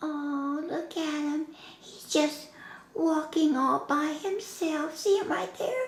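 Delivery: high, cute, adorable little hand-puppet voice. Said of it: "her PINK hand puppet! who is the most adorable puppet".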